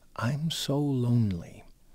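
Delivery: very soft, gentle, hushed, slightly high voice. A physician retells what a woman said after pulling him down, in a very soft voice. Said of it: "she just said to me in this very soft voice".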